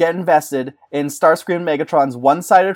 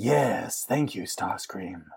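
very deep, low cartoon villain voice; 8 semitones lower, 12 dB quieter than usual. Pitching a movie scene, voicing the villain thanking his helper: Beast Wars Megatron voice. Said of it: "that was Beast Wars Megatron".

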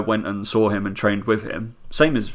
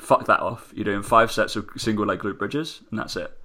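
usual speaking voice

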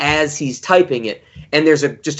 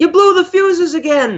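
play-acted, very high, shrill screaming yell; 3 dB louder than usual. Retelling a film scene where a father yells up at his son: retelling Bruce Davison's scream. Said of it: "Bruce Davison screams up at him like".

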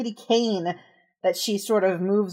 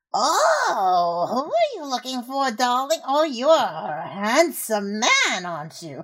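put-on raspy, scratchy old woman voice, drawn-out "oh", swooping pitch; 3 semitones higher than usual. Narrator voices an older woman calling from the shadows, scratchy old woman voice. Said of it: "this scratchy old voice like".

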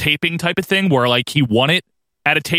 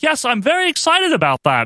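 very high, swooping, sing-song forced enthusiasm; 11 semitones higher than usual. Imitating a commentator who sounds unconvincing about next week: unconvincing Lord Alfred impression. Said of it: "he sounds so unconvincing".

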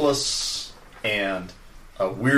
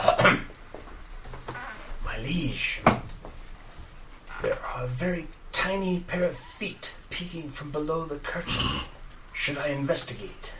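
hushed, soft, slightly high whisper; 6 semitones higher, 6 dB quieter than usual. A narrator voices someone overheard addressing their liege: whispering. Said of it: "a whispering voice".

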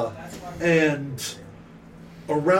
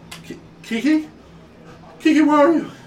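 high, loud, panicked frantic shouting. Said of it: "He's just shouting".

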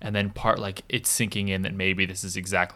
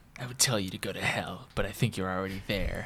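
put-on snobbish teen-sounding voice; 6 dB quieter than usual. Reading a film line in an Ethan Hawke voice, like a snooty teenager. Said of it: "I made him sound like a snooty teenager".

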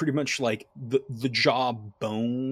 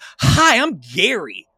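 very loud, eager, excited, high-pitched halfling voice; 9 semitones higher, 11 dB louder than usual. Narrator voices a grinning halfling greeting the party: excited Gary voice. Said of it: "Gary's so excited that you're here".

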